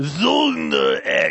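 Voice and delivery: put-on German-Russian accent. Imitating how a game pronounces its title: stereotypical Russian-German accent. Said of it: "I'm trying to do my stereotypical Russian meets German accent".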